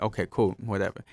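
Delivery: ordinary talk, nothing marked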